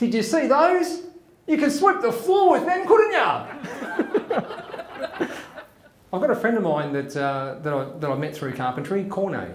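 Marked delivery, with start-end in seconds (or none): 0.0-3.5 high, squeaky mock voice while laughing. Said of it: "he goes".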